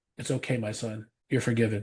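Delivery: imitated soft, tender, gentle voice. Retelling feeling a hand on their shoulder while crying, then a very gentle voice. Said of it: "a very, very gentle voice".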